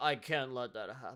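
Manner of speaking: listless, half-hearted, bored, soft, can't-be-bothered delivery. Mimicking how a protagonist's line gets delivered, in a mock-lazy bored delivery. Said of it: "just very like lazily".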